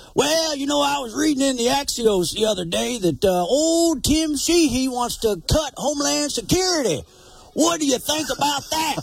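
high-pitched put-on old-timer prospector voice. Parodying political commercials, asking a question in an old prospector voice. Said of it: "use the old prospector voice".

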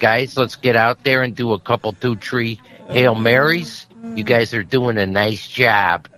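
put-on thick, hardcore Chicago accent. Imagining how a man would talk to his team, hardcore chicago accent. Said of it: "he has a hardcore Chicago accent".

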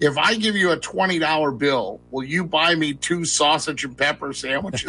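ordinary talk

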